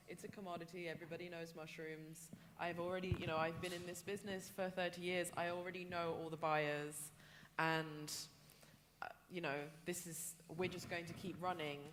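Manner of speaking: ordinary talk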